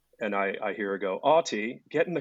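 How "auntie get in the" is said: put-on South African accent, voice higher. Retelling a woman calling from a car window, imitating a South African accent. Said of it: "The South African accent".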